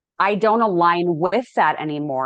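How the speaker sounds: normal talking voice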